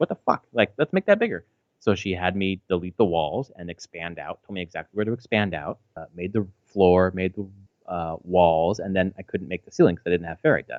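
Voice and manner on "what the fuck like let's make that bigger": put-on high child's voice. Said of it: "She's like".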